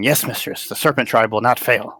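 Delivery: small, little, creature-like goblin voice. A smaller voice answers its mistress after her order, goblin voice. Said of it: "it sounds like a goblin voice saying".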